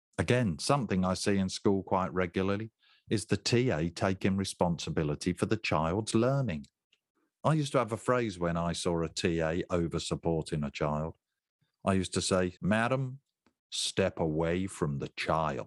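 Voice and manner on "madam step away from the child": put-on slow, deliberate American police officer voice. Telling a teaching assistant to step away from a child, american police officer voice. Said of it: "using my American police officer voice".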